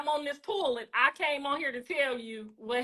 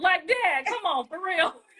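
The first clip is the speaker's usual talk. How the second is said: mock toothless-sounding voice, higher; 4 semitones higher than usual. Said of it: "he gonna say it with his teeth out".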